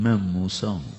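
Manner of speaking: put-on humble meek tone. Recounting a story, acting out a humble reply. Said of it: "عاجزی سے".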